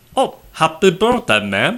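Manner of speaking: put-on Indian accent. Speaker retells a phone caller's reply to her, in an indian accent. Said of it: "in his Indian accent".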